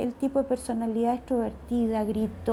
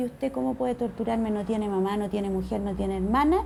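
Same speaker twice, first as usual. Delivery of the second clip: plain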